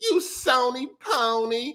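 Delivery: put-on sassy tone. Showing how saying the insult sounds: put-on sassy tone. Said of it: "You sound sassy saying that shit".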